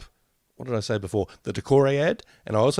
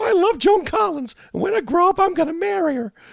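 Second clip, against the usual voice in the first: put-on very high, squeaky four-year-old little boy voice; 4 dB louder than usual. After asking why she sounds so young, speaker goes on in a four-year-old boy's voice. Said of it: "four-year-old guy's voice".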